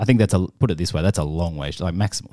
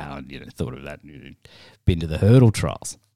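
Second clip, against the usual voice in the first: acted dismissive, offhand, brushing-off tone; 3 semitones lower than usual. Retelling the other speaker's earlier remark: imitating a dismissive tone. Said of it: "in a dismissive tone".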